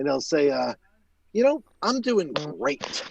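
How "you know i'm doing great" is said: a beat of silence, then strongly stressed. Retelling how a client answers "how you doing": imitating a client's emphatic reply, with a pause. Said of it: "he does it with, like, sort of like, like a pause".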